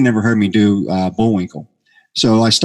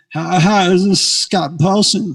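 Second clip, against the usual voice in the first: mock-nervous voice, much higher pitch; 9 semitones higher than usual. Phoning him up in a made-up character voice, imitating a nervous guy. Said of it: "this nervous guy who was like maybe a little too much".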